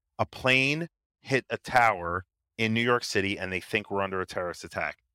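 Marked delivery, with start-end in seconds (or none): none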